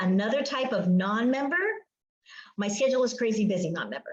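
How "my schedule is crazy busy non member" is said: fast, hurried, run-together, rattled-off phrase. Describing a crazy busy type of non-member, said fast on purpose. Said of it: "I said that fast on purpose".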